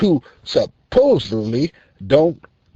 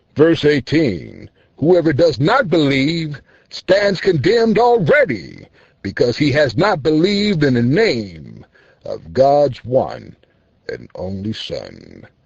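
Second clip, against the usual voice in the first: swooping, recited reading-aloud voice; 2 semitones lower than usual. Introduced as the God-fearing foreman, reading a Bible verse aloud: God-fearing foreman reading scripture. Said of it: "Here is your word read by the God-fearing foreman. The foreman speaks. / Here is your word read by the God-fearing foreman. The foreman speaks. / Here is your word read by the God-fearing foreman. / T".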